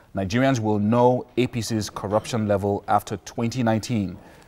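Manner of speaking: plain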